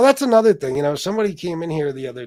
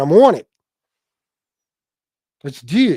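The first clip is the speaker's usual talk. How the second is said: loud, put-on Philadelphia accent, rough attempt; 6 dB louder than usual. Recounting Joey's reply to Vlad, the speaker is imitating Joey's Philly accent. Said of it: "or in the Philly accent".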